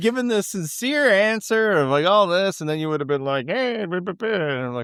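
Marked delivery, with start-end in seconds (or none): 3.5-4.3 casual, relaxed, high-pitched put-on voice. Imitating a friend's dismissive answer to a sincere question: John impression. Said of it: "that was my John impression".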